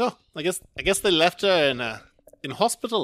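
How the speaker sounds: bad put-on New Zealand accent. Retelling a man's reaction in a zombie story, in a not-very-good new zealand accent. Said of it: "I'm doing a fucking New Zealand accent".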